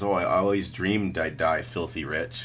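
normal talking voice

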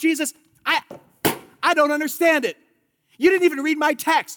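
high, upset, aggrieved tone. Acting out Martha's complaint to Jesus: imitating upset Martha. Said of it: "Martha is so upset here".

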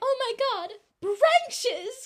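very high, very loud, slow, shrill prim lady voice. Acting out a fancy lady taken out to skip rocks: acting out a sheltered prim lady. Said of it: "And then she's like".

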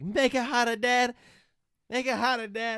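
belted out loud, wild and shrill. Retelling Lou Ferrigno benching in the movie, imitating him going crazy. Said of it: "he's just going crazy".

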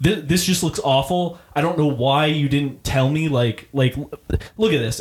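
pissed-off, fuming, angry griping. Retelling how a customer came back with a complaint, imitating a fuming customer. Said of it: "fuming. He's, like, pissed".

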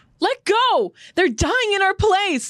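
full-throated shout, high-pitched. Voicing Krista being held back by Ymir: Krista yelling. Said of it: "Krista yells at Ymir".

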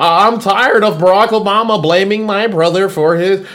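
put-on whining babyish voice. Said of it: "he sounds like a little whiny baby all the time".

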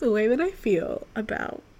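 trembling, shaky voice, close to tears. Speaker gushes about a movie she loved this year: shaky voice, about to cry. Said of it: "I'm gonna cry".

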